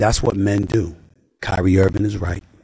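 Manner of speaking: ordinary talk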